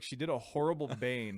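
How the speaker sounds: normal talking voice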